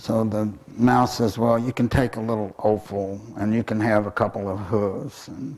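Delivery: plain reading voice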